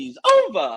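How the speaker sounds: voice breaking into a very high, cracking squeak. Recalling yelling at a jeering crowd, the speaker retells a voice crack. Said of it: "my voice cracked, and I went".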